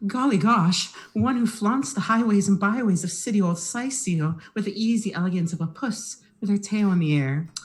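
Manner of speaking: high, genteel, mannered house cat voice. Playing the mayor's cat character: the mayor's cat voice. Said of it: "I'm the mayor's cat, don't you know?".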